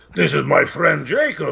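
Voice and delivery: heavy, creaky, rough-edged put-on voice. Retelling giving a fan a video shout-out: heavy voice. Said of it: "overheard me do the heavy voice".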